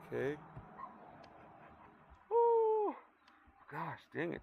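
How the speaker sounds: words stretched by yawn. A weather host talking to viewers, yawning. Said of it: "I keep yawning on you guys".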